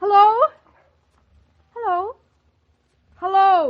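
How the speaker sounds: very high, loud, desperate, frantic shouted calls. In a drama, calling into a phone that has stopped ringing, shouting hello. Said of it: "Stop shouting".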